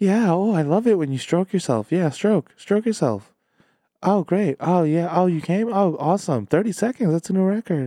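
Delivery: high, put-on girly woman's voice. Mocking the Game of Thrones writer, in a put-on woman's voice. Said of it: "putting on his best girl, like woman voice".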